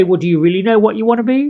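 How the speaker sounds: heavily sarcastic, extra snarky tone. Showing an even snarkier way to answer someone who says they don't want to be rude: even snarkier retort. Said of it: "You can even get even snarkier and say".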